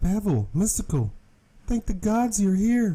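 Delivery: high, feminine put-on woman voice. Voicing a woman character in the story, woman voice. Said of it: "That's my woman voice".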